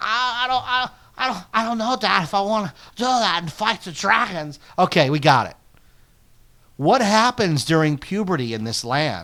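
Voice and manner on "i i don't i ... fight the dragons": put-on higher-pitched American teenager voice. Recapping a movie, acting out the son answering his dad, Jay Baruchel impression. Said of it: "Americanized teenage voices".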